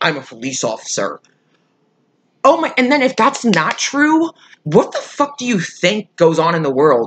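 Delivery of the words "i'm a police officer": put-on threatening tone, lower and quieter. Retelling what a driver said to scare the speaker: imitating a threatening tone. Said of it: "try and threaten me by saying".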